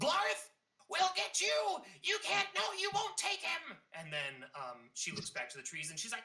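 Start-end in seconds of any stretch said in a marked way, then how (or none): 0.0-3.8 very high, clear female calling voice. Game master voicing a were-rat leaping from hiding, calling to the party: clear female voice calling out. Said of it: "with a clear voice... female voice, she calls out".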